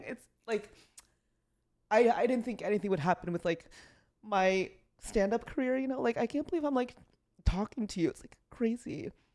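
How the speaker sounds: crying through the words, high, breaking voice. Meeting someone the speaker never expected to meet, speaking to them while crying. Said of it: "I don't know why I'm crying".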